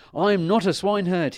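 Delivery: very high, loud outcry. The prince, having changed from rags into his best clothes, crying out. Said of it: "he cried".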